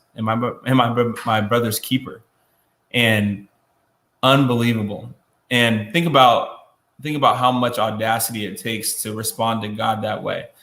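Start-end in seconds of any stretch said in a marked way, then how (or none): none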